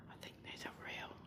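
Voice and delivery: hushed whisper. While naming animals one by one, whispering. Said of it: "I don't know why I'm whispering".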